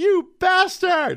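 slow, stretched, high yelling.

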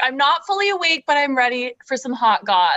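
ordinary delivery

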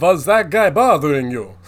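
very loud, booming vampire voice. Joking about returning to a group of girls wearing a cape, in a Dracula voice. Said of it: "say in a Dracula voice".

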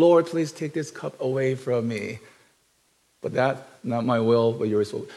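gentle, calm, meek, very mild, soft voice. Imagining Jesus Christ praying while lying down: Jesus Christ in a mild voice. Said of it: "with this very mild voice".

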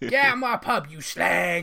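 put-on Cockney accent. Showing a generic line from watching EastEnders: EastEnders Cockney voice. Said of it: "that's my generic".

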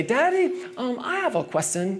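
put-on high, tiny little child's voice. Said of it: "this tiny little voice".

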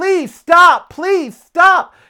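very high, shrill, loud scream. Speaker recalling screaming at Ember heading toward a busy street, retelling a scream. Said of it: "i'm screaming".

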